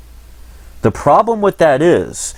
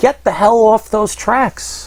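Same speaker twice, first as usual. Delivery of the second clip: stern voice, high in pitch, drawn out slowly. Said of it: "keep people from doing that and saying".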